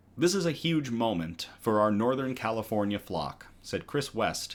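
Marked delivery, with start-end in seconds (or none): none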